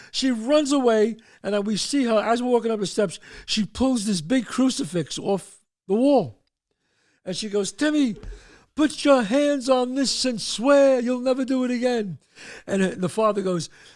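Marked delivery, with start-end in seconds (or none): 7.7-12.1 mock screaming voice, higher pitch. Retelling a story, the mother demands a swear: imitating someone screaming. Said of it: "They're all screaming this".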